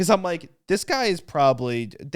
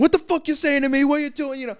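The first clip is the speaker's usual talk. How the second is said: very high, wild screaming rant; 13 semitones higher, 4 dB louder than usual. Retelling how a man in the cinema turned and screamed at people: imitating a man screaming. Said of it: "starts screaming at them".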